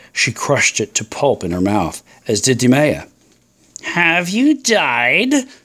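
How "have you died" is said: high mocking taunt, stretching died. The snake taunts her as she eats a grape, taunting. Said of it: "taunted the snake".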